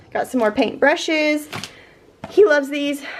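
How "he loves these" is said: cracking voice, pitched higher. Showing the groceries bought for a kid who loves painting: voice cracking. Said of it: "My voice cracked".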